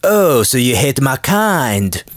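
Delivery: bad put-on French accent, very slow, drawn out. Imagining french listeners reacting to the podcast, put-on french accent. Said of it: "that's supposed to be a French accent".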